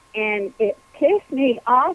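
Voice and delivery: ordinary talk, nothing marked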